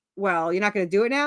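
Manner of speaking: plain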